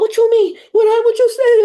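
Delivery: demanding yelling. Describing people arguing with the collective, acting out how they yell. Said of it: "And then they're yelling".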